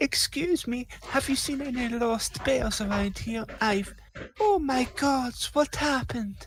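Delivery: very high falsetto head voice. Storyteller voicing a new character after another one dies, in falsetto voice. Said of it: "this falsetto time".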